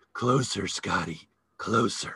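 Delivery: voice dropped low and husky. Retelling the actress calling you closer as you hold a flashlight, Kim Novak husky voice. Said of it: "in her husky voice".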